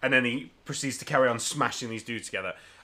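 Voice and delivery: ordinary talk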